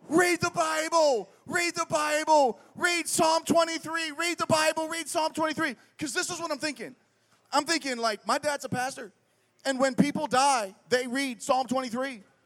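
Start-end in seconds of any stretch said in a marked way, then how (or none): 0.1-5.7 mock, high, repeated yelling at top of lungs. A pastor's kid acts out what they were yelling back then, retelling a yell. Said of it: "This is what I am yelling at the top of my lungs".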